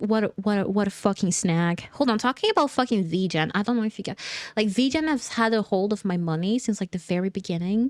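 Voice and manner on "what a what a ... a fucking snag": plain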